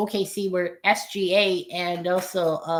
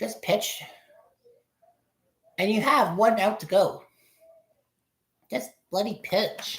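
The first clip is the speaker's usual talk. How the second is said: nervous, anxious, on edge; 2 semitones higher than usual. Watching a baseball game, urging the pitcher to get the last out, anxious. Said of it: "I'm just anxious right now".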